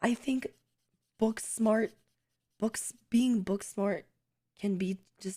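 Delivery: halting voice on the verge of tears. Talking about self-awareness and being book smart, close to crying. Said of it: "I sound like I'm about to cry again".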